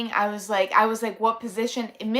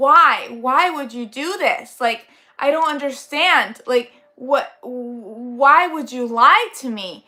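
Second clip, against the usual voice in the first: furious angry yell with long drawn-out why; 2 semitones higher, 5 dB louder than usual. Retelling a dream about friends who lied: imitating own screaming. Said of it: "to go scream at them".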